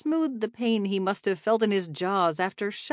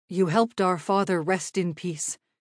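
ordinary delivery, nothing marked

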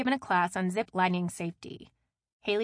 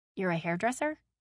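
plain reading voice

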